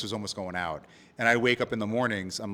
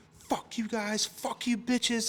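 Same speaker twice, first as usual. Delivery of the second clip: mock drunken screaming, very high, slow, drawn out; 12 semitones higher, 6 dB quieter than usual. Telling how a shirtless drunk man stormed into the restaurant, retelling a drunk man screaming. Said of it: "just starts screaming at everyone".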